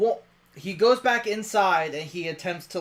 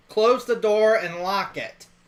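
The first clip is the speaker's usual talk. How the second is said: ordinary delivery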